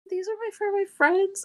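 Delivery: put-on high-pitched kid voice.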